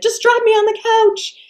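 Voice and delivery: wild, frantic yelling, pitched very high. Retelling what you shouted to your two friends on the third floor, retelling a wild-eyed shout. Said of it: "wild eyed and shouting by this point".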